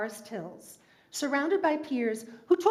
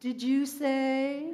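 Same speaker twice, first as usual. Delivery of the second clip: put-on glowering, disapproving intoning; 2 semitones higher than usual. Retelling the father's reply at the dinner table: imitating a glowering, intoned question. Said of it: "my father would raise his head, glower, and intone".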